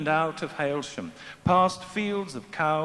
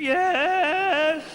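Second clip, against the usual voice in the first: drawn-out, very high, strangled sick-sheep bleat; 11 semitones higher, 5 dB louder than usual. Narrator voicing a congregation replying to a greeting, in a strangled bleat. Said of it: "in a strangled bleat, like a herd of sick sheep".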